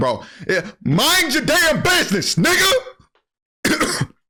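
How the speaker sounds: mock very high, unbothered, swooping, drawn-out careless dismissal. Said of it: "Chris is still just playing like".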